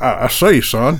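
put-on cartoon rooster voice. Naming Looney Tunes characters, doing Foghorn Leghorn voice. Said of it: "Foghorn Leghorn?".

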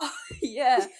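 laughing through the words. Reacting to a shocking rumour mentioned by another speaker, laughing while talking. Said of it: "Sorry, I don't mean to laugh".

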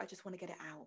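acted-out whisper. Acting out how women want to tell their stories: acting out a whisper. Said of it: "this little kind of whisper".

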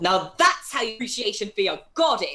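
loud in-character yell. Voicing a character pointing at the captain: character yelling. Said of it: "gonna point at her and yell".

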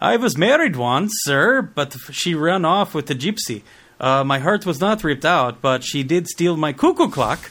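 put-on, loud, high-pitched Norwegian accent. Speaker retells a scene, voicing the Swede's reply: Norwegian accent. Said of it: "I haven't done a Norwegian accent in forever".

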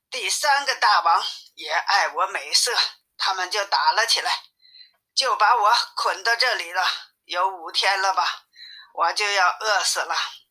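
ordinary delivery

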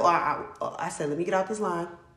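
ordinary talk, nothing marked

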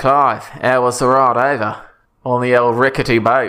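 put-on easy, casual Australian accent. Improvising a character greeting another character at brunch, in an aussie accent. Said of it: "But you've got an Aussie accent?".

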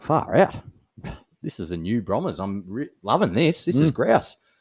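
ordinary talk

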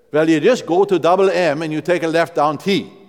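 loud, rural Midwestern Norwegian Wisconsin brogue. Retelling a man giving directions in near despair, Norwegian Wisconsin brogue. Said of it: "in the best Norwegian brogue of rural Midwestern Wisconsin".

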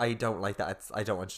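plain

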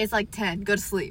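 ordinary talk, nothing marked

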